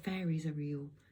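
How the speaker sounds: ordinary delivery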